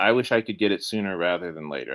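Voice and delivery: ordinary delivery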